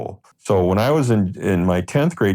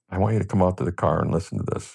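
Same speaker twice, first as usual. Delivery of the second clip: low-key, subdued, held-back gangster-like voice; 5 dB quieter than usual. Retelling what a friend said about a demo tape: imitating Bobby's subdued gangster voice. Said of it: "it sounds just like him when you say".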